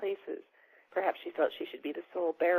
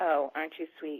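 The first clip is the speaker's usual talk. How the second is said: flat, toneless, monotone delivery; 2 semitones lower than usual. A woman working here answers the narrator's compliment, in a flat voice. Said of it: "she said in a flat voice".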